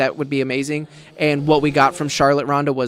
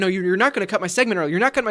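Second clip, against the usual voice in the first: heated yelling protest; 5 semitones higher than usual. Retelling a wrestler's promo when someone walks through his shot: imitating Titus O'Neil yelling. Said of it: "yelling about".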